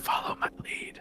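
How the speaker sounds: soft, barely voiced whisper. Having asked to whisper to June, the speaker whispers to her: whispered. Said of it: "I'm gonna whisper".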